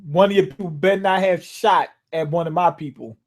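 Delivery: ordinary delivery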